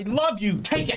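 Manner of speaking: high, abusive-sounding voice. Acting out an abusive husband or father: imitating an abusive husband. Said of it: "like an abusive husband or father who's going".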